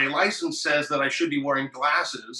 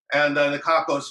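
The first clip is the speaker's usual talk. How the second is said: usual speaking voice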